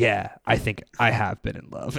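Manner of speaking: mock, low, dead-flat, completely expressionless deadpan. Retelling a game scene where Otacon asks Snake about love, deadpan Solid Snake voice. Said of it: "like completely deadpans".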